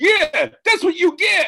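shrill, very high, very loud scream at full volume. Praising wrestling beatdowns, imitating the Usos screaming in the background. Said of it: "screaming in the background".

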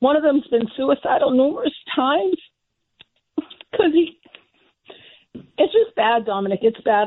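upset voice with distress breaking through. Telling Dominic about struggling blind friends in Boston, upset. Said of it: "I'm sorry I'm getting upset".

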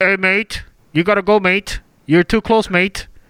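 put-on Australian accent. Retelling a drone video from Australia, imitating Australians. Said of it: "And Australia's like".

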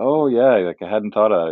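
mock sheepish, bashful, self-conscious tone. Retelling a player's answer about his last game there: imitating a sheepish tone. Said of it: "in his very, like, sheepish way said".

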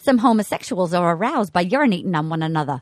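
put-on heavy Massachusetts accent, voice very low. Quoting what an eighth-grade teacher said, in a thick Massachusetts accent. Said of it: "Thick Massachusetts accent".

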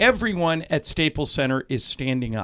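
ordinary talk, nothing marked

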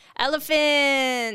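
odd, slow, loud, drawn-out delivery.

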